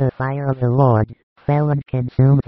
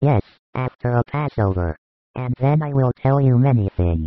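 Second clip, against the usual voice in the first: plain reading voice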